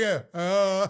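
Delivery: put-on panting like a dog. Acting out a reaction in front of the TV: fake dog-like panting. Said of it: "like a dog, like, panting in front of the T V".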